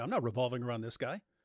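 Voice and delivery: ordinary talk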